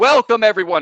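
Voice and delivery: booming bellow. Voicing Xander welcoming the crowd at the games: bellowing announcer voice. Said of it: "his voice just kind of bellows".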